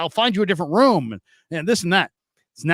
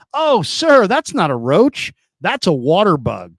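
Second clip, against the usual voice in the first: mock know-it-all, slow, drawn-out, self-important tone; 4 dB louder than usual. Retelling the guy's correction of a roach complaint: imitating someone acting like it matters. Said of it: "like this matters".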